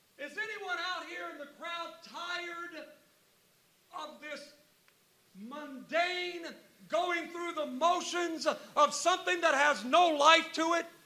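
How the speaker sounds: shouting. Retelling Jesus standing up to call out to the crowd: imitating Jesus shouting. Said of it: "Jesus stands up and he shouts".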